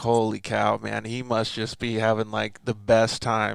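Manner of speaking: plain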